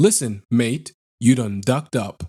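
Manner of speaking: low, slow, very unfriendly voice. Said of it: "very unfriendly".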